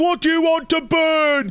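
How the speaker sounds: very high shouted voice, "burn" drawn out. Describing a voice heard through radio static, imitating someone yelling. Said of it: "it's yelling like".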